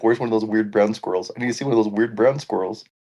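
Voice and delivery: ordinary talk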